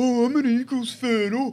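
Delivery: put-on very high, taunting, drawn-out kid's chirp. Retelling a kid two seats over chirping at them, retelling a mocking jeer. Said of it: "mocking us".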